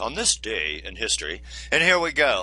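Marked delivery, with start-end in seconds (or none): 0.0-1.4 showy, very low, good deep put-on voice. Opening an on-this-day-in-history segment; good deep voice. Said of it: "let me get it in my good deep voice".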